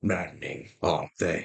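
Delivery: gruff, low, rough, weathered, world-worn voice. A hunched wolfkin steps out of the shadows and speaks; gruff, weathered voice. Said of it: "The gruff, weathered voice precedes".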